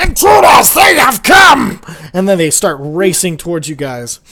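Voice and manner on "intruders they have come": shrill, very loud, high-pitched alarmed yell. Game master voices the two closest creatures spotting the party, yelling. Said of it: "look over and yell".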